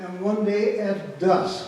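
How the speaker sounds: dusk stressed hard, drawn out slow and loud.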